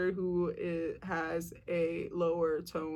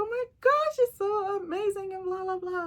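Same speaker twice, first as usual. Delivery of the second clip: high-energy, loud, gushy high register; 14 semitones higher, 5 dB louder than usual. Showing how energy changes in a higher register: higher-pitched register. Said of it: "talking in this kind of a register".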